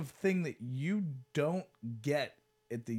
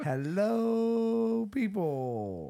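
creepy, high voice with hello stretched long; 6 semitones higher, 5 dB louder than usual. In group banter, mimicking a person in the conversation: Danny Palm impression. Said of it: "your impression of him".

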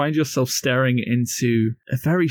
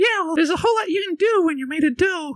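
lively, animated, very high-pitched character voice. Voicing a gingerbread man who points at the players: animated gingerbread man voice. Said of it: "is a gingerbread man, animatedly pointing at you and goes".

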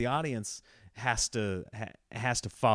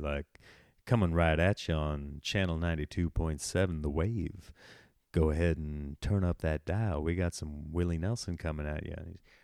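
put-on radio DJ voice, much lower; 6 semitones lower than usual. A podcaster remarks on his own voice, then slips into a radio dj voice. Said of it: "I'm almost like a radio DJ".

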